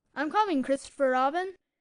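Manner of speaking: squeaky voice. Voicing Roo calling to Christopher Robin before jumping: squeaky voice. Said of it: "And he squeaked out".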